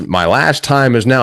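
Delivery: ordinary talk, nothing marked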